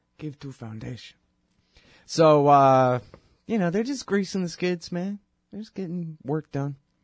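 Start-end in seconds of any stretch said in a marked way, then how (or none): 0.2-1.2 put-on Russian accent, quieter. Talking politics, repeating a phrase in a fake russian accent. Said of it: "That's my Russian pretend accent".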